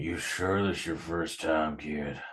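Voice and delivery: guttural growl dragged up from the throat. Voicing a werewolf questioning a newcomer: guttural growl. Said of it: "He can feel this guttural growl at you as he says".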